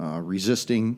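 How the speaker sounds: ordinary delivery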